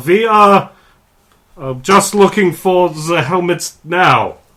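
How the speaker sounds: terrible exaggerated fake German accent, loud and high. After a roll requires it, speaking a line in a terrible German accent. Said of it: "I have to do a terrible German accent".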